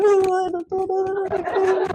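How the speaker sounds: mock crying voice, very high and very drawn out. Retelling a painful night march, on the phone to a husband: retelling crying on the phone. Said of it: "in tears".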